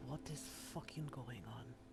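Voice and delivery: hushed, quiet half-whisper, under the breath. Voicing a character asking another what is going on: quiet half-whisper. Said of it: "quietly whisper".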